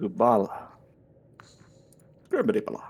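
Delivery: put-on babbling baby talk. Speaking to the base commander in character: baby talk. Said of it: "you can stop with the baby talk".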